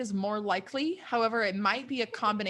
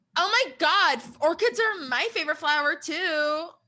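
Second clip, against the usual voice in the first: deliberately rude put-on voice, pitched up; 7 semitones higher, 4 dB louder than usual. Retelling what a contestant said about orchids: rude Victoria imitation voice. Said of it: "my Victoria imitation voice is really rude".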